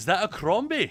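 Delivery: put-on cheery, high, jovial Scottish accent. Retelling what a stranger said from behind, in a put-on jovial Scottish accent. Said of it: "this very jovial Scottish accent piped up behind me".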